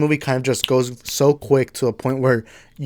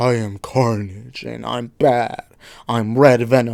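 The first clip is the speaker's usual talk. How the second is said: silly demonic villain voice, dragged out very slowly. Mocking how the movie made the villain sound, demonic Carnage voice. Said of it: "trying to make him seem demonic".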